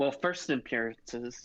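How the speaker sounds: normal talking voice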